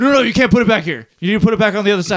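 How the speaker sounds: high, loud, rushed delivery.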